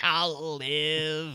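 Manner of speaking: put-on shrieking alien voice. Speaker retells a scene where a character answers a threat, in a shrieking E.T. voice. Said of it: "[name] shrieks out in like an ET voice".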